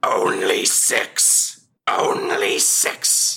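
weird, rough, creaky, beaky voice, very slow. Game master voicing owlbears shimmering out of stone to the players, weird beaky voice. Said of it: "They say in a weird beaky voice".

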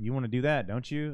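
mock deadpan, blank taunting tone. Retelling how a fighter taunts his opponent with a blank face: imitating a blank-faced taunt. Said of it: "just fucking blank face".

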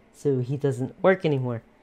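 ordinary delivery

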